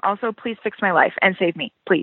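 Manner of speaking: put-on pleading tone. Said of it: "a pleading text from you that went something like".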